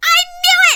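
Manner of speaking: very high, very loud, shrill yell. Retelling being proven right about the cat: retelling own yell. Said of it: "and I yelled".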